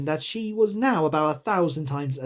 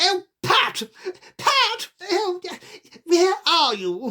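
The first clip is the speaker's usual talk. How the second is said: very high, cross rabbit voice calling out. Reading the story aloud, the narrator voices the rabbit: angry rabbit voice. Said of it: "Next came an angry voice, the rabbit's".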